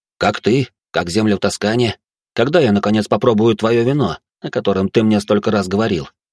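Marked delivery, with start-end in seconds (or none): none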